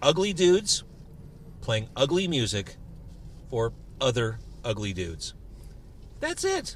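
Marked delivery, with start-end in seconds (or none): 0.0-5.3 slow, deliberate, halting, word-by-word delivery. Delivering an elevator pitch, slowly so it sinks in: slow and deliberate. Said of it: "I'm going to say this slowly to let it sink in".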